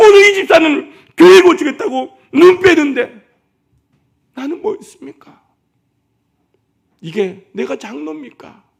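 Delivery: put-on tearful lament, very high, loud sobbing wail. Telling how the doctor wept on the floor, acting out his tearful wailing. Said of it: "하고 통곡하면서 바닥에서 울더라는".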